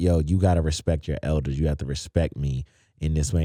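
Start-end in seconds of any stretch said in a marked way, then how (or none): none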